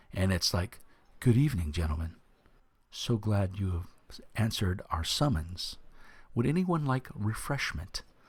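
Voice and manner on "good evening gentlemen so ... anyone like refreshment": effeminate yet masculine male elf voice. Voicing an elf who greets the players: effeminate masculine elf voice. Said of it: "a very effeminate, masculine voice".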